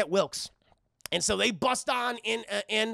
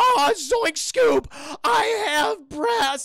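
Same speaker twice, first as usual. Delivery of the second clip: high, loud, pitched-up freak-out; 8 semitones higher, 7 dB louder than usual. Retelling a scene where Shaggy grows breasts: imitating Shaggy freaking out. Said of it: "he's fucking freaking out".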